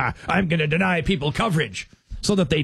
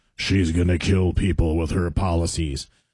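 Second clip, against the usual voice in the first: put-on gloomy voice, much lower; 11 semitones lower than usual. Showing how a political attack ad might sound: Lurch impression. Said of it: "Like Lurch from Adam's Family".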